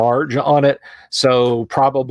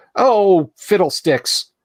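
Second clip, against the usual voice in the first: sulky, pouty, pitched-up voice; 7 semitones higher than usual. Voicing a spellcasting companion heard in one ear: pouty voice. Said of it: "you just hear this pouty".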